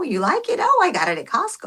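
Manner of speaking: animated, lilting, high, swooping chatty voice. Showing how the speaker taps into Carolyn, doing Carolyn's voice. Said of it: "I tap into Carolyn".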